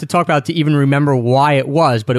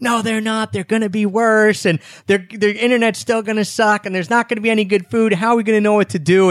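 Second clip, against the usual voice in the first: high, mild mock yell. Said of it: "I think I was yelling".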